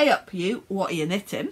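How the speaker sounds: terrible fake Yorkshire accent. Reading out a dictionary's example sentence for a word, in a terrible yorkshire accent. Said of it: "Please excuse my terrible Yorkshire accent".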